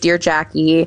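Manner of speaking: normal talking voice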